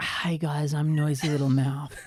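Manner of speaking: put-on ASMR voice. Introducing self on a podcast as an ASMR character: Noisy Little Mouth ASMR voice. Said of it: "an A S M R character that I do".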